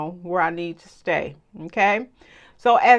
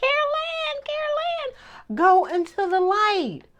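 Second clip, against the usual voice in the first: tiny, very high-pitched little voice. Recalling the lady in the movie Poltergeist calling Carol Ann: little voice of Poltergeist lady. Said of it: "I remember her little voice".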